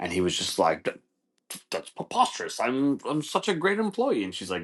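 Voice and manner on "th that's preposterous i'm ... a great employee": high, swooping, stumbling put-on British accent. Retelling a coworker's reply to being told he's fired: imitating a fake British accent. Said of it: "this guy with the fake British accent".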